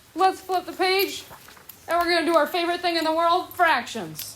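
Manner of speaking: high, fast, mock-cheerful sarcasm.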